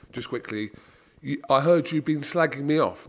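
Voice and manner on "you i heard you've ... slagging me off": ordinary talk, nothing marked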